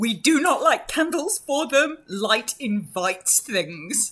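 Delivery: hard, high, loud shouting. Voicing Drizella answering during a fight: shouting back. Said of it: "Drizella shouts back".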